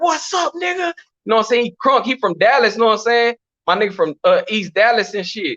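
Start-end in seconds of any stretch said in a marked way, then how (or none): 0.0-0.9 high-pitched calling out. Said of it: "He like".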